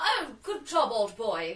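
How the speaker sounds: very English voice, very slow, every word stretched. Describing how the twin characters talk to each other: very English Ken voice. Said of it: "they're very English".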